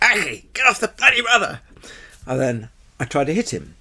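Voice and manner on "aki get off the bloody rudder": mock very high-pitched, shrill, loud shout. An instructor retells shouting at his student during a spin, retelling a shout. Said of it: "And then I'm shouting at him".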